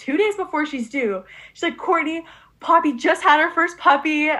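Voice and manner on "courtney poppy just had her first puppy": loud, high, urgent shouting. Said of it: "My mom yells at me".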